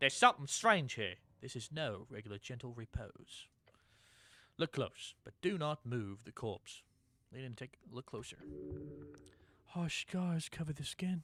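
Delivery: put-on British accent, scholarly and clever-sounding. Streamer with few viewers voices the Intelligence lines: British accent. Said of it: "I'm gonna make intelligence maybe with a British accent".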